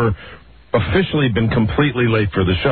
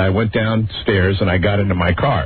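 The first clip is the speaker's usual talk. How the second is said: normal talking voice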